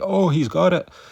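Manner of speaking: put-on high scream with Dutch accent. Narrating a Pride fight, the speaker mimics Bas Rutten reacting to a near armbar: Bas Rutten's Dutch-accented scream. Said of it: "in his Dutch accent".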